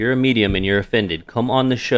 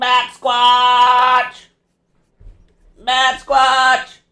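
put-on creature cry, much higher, slower; 5 dB louder than usual. Guessing aloud how the cryptid sounds, doing a Batsquatch creature cry. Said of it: "I bet he sounds like this".

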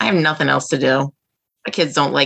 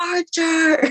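very high-pitched calling yell; 13 semitones higher than usual. Retelling a night searching for a missing cat: imitating yelling out a door. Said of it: "yelling out the door".

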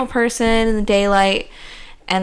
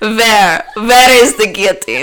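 fake, put-on German accent; 6 dB louder than usual. Speaker announces a German accent before a line: put-on German accent. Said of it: "German accent".

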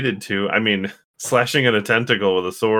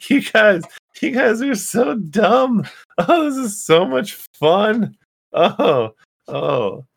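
very high, slow, taunting cackling laughter; 11 semitones higher than usual. Voicing Trixie floating over the fire: cackling, laughing. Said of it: "cackling, laughing".

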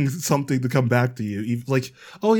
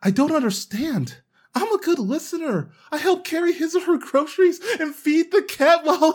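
earnest put-on nice-guy voice, very high. Performer in a voice acting bit, doing their best nice guy voice. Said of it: "your best nice guy voice acting job".

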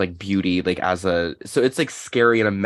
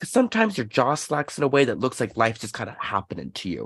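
put-on broad New Jersey accent laid on thick, swooping; 4 semitones higher than usual. Quoting Natalie Portman's pop-star character insulting her sister, in a heavy New Jersey accent. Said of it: "Like in a heavy New Jersey accent".

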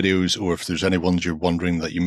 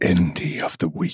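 soft, ASMR-style whisper. Announcing a show segment after being asked to asmr it: whispered asmr style. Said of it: "Just A S M R it into the mic".

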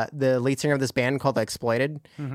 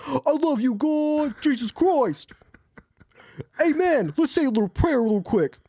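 put-on gangster voice, pitched much higher. Describing a tattooed motorcycle gangster found in a meme thread, imitating him. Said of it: "but he's also like".

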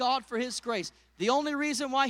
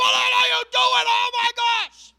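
very high, very loud, alarmed, panicked yelling; 11 semitones higher, 11 dB louder than usual. Recounting the moment she failed to grab her, retelling her own yell. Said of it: "I'm yelling".

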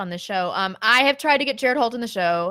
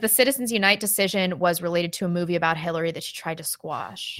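plain

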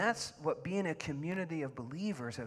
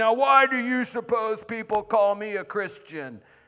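very loud, high, condescending voice; 6 semitones higher, 14 dB louder than usual. Telling a story, quoting a man addressing a class of young boys: mock-condescending voice. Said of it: "this condescending voice".

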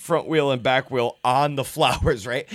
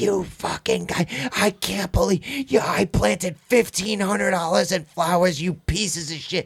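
angry, half-shouted, mildly yelled rant; 4 semitones higher than usual. Retelling a lady coming out over branches in her flowers: imitating a woman screaming. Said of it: "she comes out fucking screaming".

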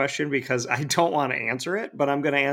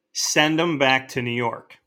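plain

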